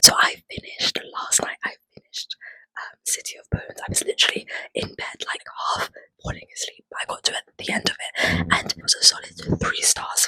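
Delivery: soft, hushed whisper throughout. Recording a clip late at night, whispering throughout. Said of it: "I'm literally gonna be whispering this whole clip".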